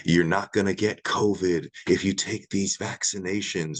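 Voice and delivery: creepy tone of voice. Quoting a promise about vaccinations: creepy Joe Biden voice. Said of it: "as Joe Biden said in the creepiest tone of voice".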